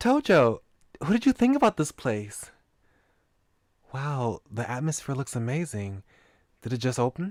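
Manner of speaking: attempted, put-on girl character voice. Reading a game character's lines aloud: attempted girl voice. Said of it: "I was trying to do a girl voice".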